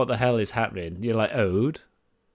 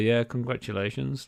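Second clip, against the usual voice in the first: casual, offhand, unbothered, nonchalant; 5 dB quieter than usual. Voicing an unseen voice that the listeners hear, nonchalant. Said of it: "Just a really nonchalant thing".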